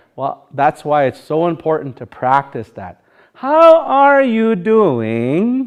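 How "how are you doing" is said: put-on very slow, old, pitched-up Sioux Valley Dakota accent. Showing learners how to practice English the old way: meadowlark accent in English. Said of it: "Even say it like that".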